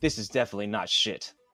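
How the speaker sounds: reserved, soft, understated, very British delivery. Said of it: "it's very British of you".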